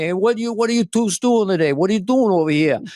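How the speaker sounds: put-on New York Bronx accent. Telling how Irish relatives met a guy in the Bronx: New York Bronx accent. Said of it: "the first guy that talked like".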